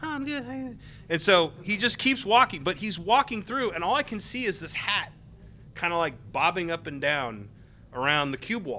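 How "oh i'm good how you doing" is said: high, soft and gentle voice.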